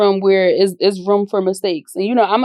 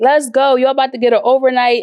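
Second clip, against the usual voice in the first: mock yelling in a higher voice; 4 semitones higher than usual. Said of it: "I'm screaming".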